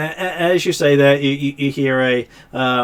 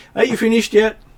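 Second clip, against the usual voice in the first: high female dwarf voice, calling out; 8 semitones higher than usual. Game narrator voicing a dwarf woman calling from the front, female dwarf voice. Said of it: "dwarven voice, female voice out the front going".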